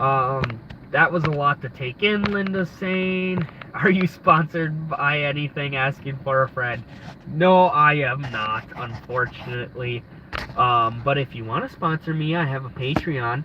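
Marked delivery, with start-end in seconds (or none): none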